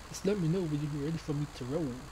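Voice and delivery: put-on country accent. Playing a flight game, repeating a character's line in a country accent. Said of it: "I just like that guy's accent".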